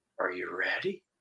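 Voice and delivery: kind, gentle, low, very soft hushed voice. Retelling a voice heard while filled with the glory of god; imitating a kind, gentle voice. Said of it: "a kind and gentle voice say".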